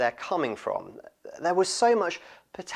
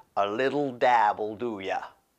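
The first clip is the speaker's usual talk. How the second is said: slow, awful put-on American accent; 4 semitones lower than usual. Quoting a phrase that only works in an American accent: awful American accent. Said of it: "I think it only works in an American accent. ... That's an awful American accent".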